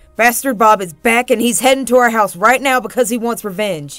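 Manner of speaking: very loud, full-volume, urgent yell. Narrator reads Nick speaking to the narrator while speeding up the truck, yelling. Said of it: "he yelled".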